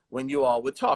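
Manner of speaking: normal talking voice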